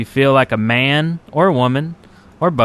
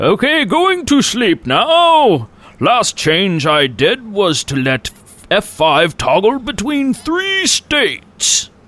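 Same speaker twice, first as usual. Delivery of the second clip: put-on English gentleman accent, swooping pitch; 7 semitones higher than usual. Reading a Twitter post aloud after being asked to do an accent: English gentleman accent. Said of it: "from the English gentleman that just read that".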